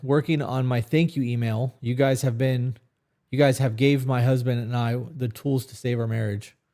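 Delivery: ordinary delivery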